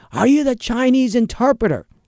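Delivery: shrill, very high-pitched scream. Retelling a defense attorney screaming at the speaker, re-enacting the scream. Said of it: "he starts screaming".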